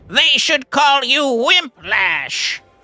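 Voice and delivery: put-on villain voice. Trying out a line as a wimp villain, checking if it sounds right; villain voice. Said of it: "How's that?".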